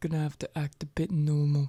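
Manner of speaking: private, covert, confiding aside. Acting out what Ray will say, pulling the other man in, said quietly. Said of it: "and like say quietly to him".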